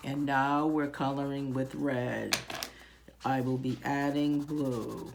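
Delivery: slow, flat, toneless droning lecture voice. Imitating how lecturers talk: flat monotone. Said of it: "they do kind of talk in a monotone".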